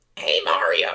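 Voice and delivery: loud, called-out cartoon character voice. While discussing which character a voice resembles, a speaker tries out a Toad voice.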